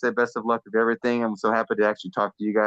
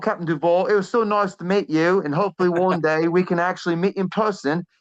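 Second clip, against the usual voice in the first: best-effort put-on British accent, pitched up; 8 semitones higher than usual. Saying goodbye to captain duvall as asked by the host, british accent. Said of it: "do your best impression when we say goodbye in your best British accent".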